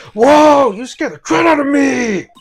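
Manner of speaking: shouting loudly. A game character startled by someone suddenly appearing, shouting. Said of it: "can you talk without shouting?".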